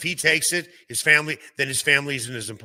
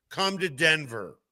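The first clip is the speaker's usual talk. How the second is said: normal talking voice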